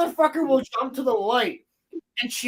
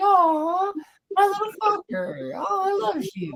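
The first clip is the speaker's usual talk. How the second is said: very high, slow, syrupy, sugary sweet voice; 9 semitones higher than usual. Speaker demonstrating how they address their cricket, in a very sweet voice. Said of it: "it's in a very very very sweet voice like this".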